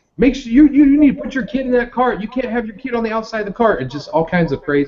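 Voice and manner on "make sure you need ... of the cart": mock frantic, shrill, very high-pitched screaming. Retelling how they screamed at people coming up with carts, imitating screaming at people. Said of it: "they were screaming at people like".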